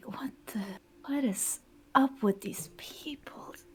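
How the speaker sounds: very quiet, hushed, whispered grumbling mutter. Retelling a story, the speaker acts out a woman muttering under her breath. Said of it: "Underneath her breath, she like mutters".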